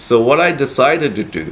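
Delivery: plain reading voice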